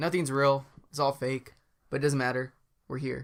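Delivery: ordinary talk, nothing marked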